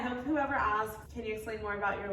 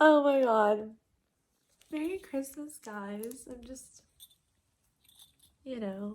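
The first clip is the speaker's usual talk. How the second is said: loud, slow, tearful speech through crying; 2 semitones higher, 6 dB louder than usual. Reacting after reading a card someone made, crying while talking. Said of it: "And I'm literally crying".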